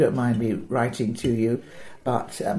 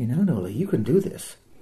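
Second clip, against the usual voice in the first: personal, confiding, conversational voice. Retelling encouragement on a film set: imitating Dustin Hoffman's quiet voice. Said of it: "he got a very quiet voice".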